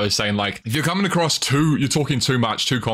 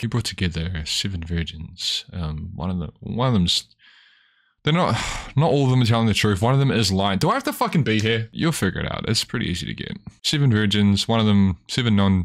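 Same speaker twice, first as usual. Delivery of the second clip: mock depressed voice, lower; 3 semitones lower than usual. Imitating a video's narrator who sounds depressed: imitating someone sounding depressed. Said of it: "Why does this guy sound so depressed?".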